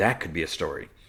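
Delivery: ordinary delivery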